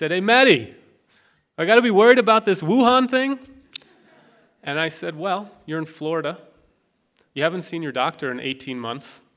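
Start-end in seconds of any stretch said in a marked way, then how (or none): 0.1-3.4 put-on very loud, high, thick Irish Boston accent.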